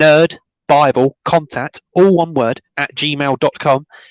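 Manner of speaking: slow, careful, deliberate delivery, piece by piece. Repeating the contact email for viewers a second time, saying it again slower. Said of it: "I'll say it again slower".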